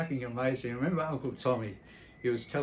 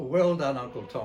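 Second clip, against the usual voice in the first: ordinary talk, nothing marked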